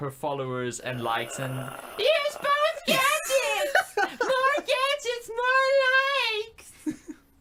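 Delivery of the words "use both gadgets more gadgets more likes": very high screaming put-on villain voice. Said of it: "a Harley Quinn knockoff is screaming at you".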